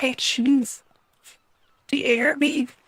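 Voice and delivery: whispering voice. Speaking to a wedge of cheese, checking no one sees: whispering. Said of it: "And whisper at the cheese".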